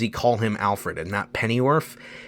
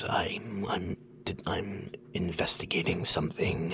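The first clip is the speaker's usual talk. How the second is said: breathy, hushed, whispered growling voice; 5 semitones lower, 13 dB quieter than usual. Imitating the new actor's Batman voice: imitating a whispery Batman voice. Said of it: "very like this".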